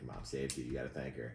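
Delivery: quiet half-whispered voice. Retelling leaning over to half-whisper to Sam: imitating own half-whisper. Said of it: "I whispered to Sam".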